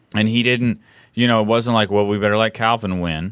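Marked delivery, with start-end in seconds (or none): none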